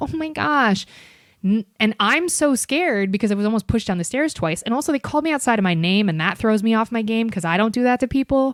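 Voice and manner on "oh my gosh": mock innocent and helpless tone, high-pitched. Describing how the girls flipped their act for security, mock doe-eyed innocence. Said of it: "flip into this doe-eyed".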